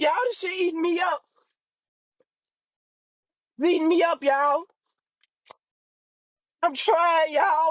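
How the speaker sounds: speaking through tears. Speaker updating their audience about a little sister, crying while talking. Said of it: "because I'm getting on here crying".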